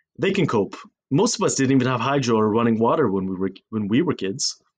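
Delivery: ordinary delivery, nothing marked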